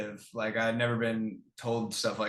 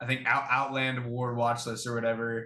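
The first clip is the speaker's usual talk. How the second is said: ordinary talk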